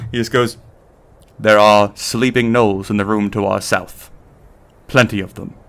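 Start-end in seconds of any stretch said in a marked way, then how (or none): 1.4-5.5 hushed, quiet put-on character voice. Voicing Benny as he comes up to the players, Benny's voice, quieter tone. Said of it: "but in a quieter tone".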